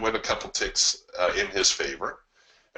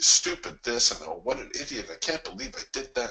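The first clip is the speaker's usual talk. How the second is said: acted scolding voice; 2 semitones higher than usual. Speaker acts out a man as the market backs up on him: mock self-berating. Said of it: "He started calling himself down".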